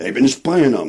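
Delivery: sharp, snapped delivery. A narrator reads a man's retort during a quarrel, snapped. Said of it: "snapped William Button".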